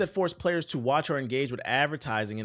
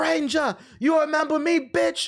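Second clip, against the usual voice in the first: very high, jeering, taunting orc voice; 5 dB louder than usual. Retelling how a returning orc taunts the player: imitating a game orc. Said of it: "that same orc would show up with an eye patch. And he'd be like".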